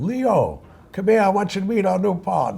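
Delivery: put-on English with a Yiddish-inflected accent.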